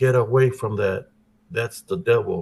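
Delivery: put-on old woman voice, yelling. Retelling a grandmother's warning away from a cricket: imitating grandmother yelling. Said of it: "I hear my grandmother's voice yell".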